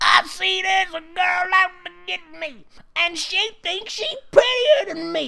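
very high, slimy, nasty witch voice. Reading a story aloud, voicing the witch: nasty, slimy witch voice. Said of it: "The witch said in a nasty voice".

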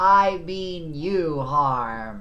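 loud booming disembodied voice, "harm" drawn out. Game master voicing a voice answering players seeking a way out, booming. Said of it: "the voice booms back".

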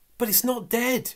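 very high, sharp, objecting voice. Told she will boil the lobster, Balakwa objects, protesting. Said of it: "protested Balakwa".

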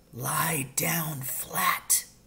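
hushed whisper under the breath. Reading a story, the father speaks as a keeper scans the clearing: whispered. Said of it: "my father whispered".

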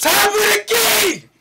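very loud, very high, very slow drawn-out shout. Reacting to a shot in the game: yelling. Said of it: "I'm yelling. I'm sorry".

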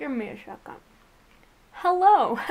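speaking with candy in mouth. Apologizing to viewers while eating a Jolly Rancher, candy in mouth. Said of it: "I'm eating a Jolly Rancher".

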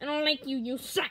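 put-on cartoon character voice. Showing the voices used for video game characters, Waluigi voice. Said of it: "That's my voice for Waluigi".

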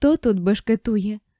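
muffled, dull, low, hollow voice. A man questions the narrator who just bumped into him, in a muffled low voice. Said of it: "глухим низьким голосом питає".

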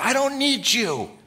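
very high, loud, slow, shrill drawn-out scream. Retelling throwing a card into a pit: imitating own past scream. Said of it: "I just screamed".

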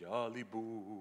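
spooky, creepy voice. Looking for a ghost and tossing out names, in a scary voice. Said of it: "in that scary voice".

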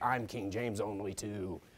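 very low, very hushed, slow unhinged voice. Retelling what a person said to a soul winner; crazy voice. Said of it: "in this crazy voice".

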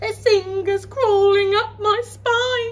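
shrill, very high, loud whining voice. Lanky Len, with a mouse crept inside his top, begins whining. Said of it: "Lanky Len began to whine".

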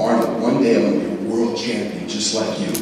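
ordinary talk

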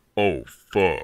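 very deep, hushed, hard bass voice. Demonstrating the deep voice someone suddenly makes, in a hard bass voice. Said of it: "Just hard bass".

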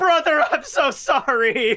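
put-on tearful sobbing voice, pitched very high. Playing a con artist hugging his brother: fake crying. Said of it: "I'm gonna cry".

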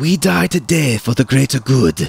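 put-on loud, snarling growl, thick low Gothic accent. Narrator reading an alien leader addressing Stichel before their swords clash: thickly accented growl. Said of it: "addressing her in a thickly accented low Gothic".

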